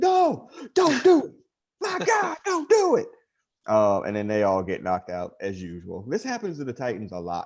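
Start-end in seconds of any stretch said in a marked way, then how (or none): 0.0-3.1 put-on wrestling commentator voice. Retelling a comic book fight scene in a Jim Ross voice. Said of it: "Jim Ross voice".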